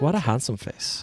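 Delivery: put-on Swedish accent. Saying the line again after explaining the accent: Swedish accent. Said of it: "Swedish accent sounds like a light German accent".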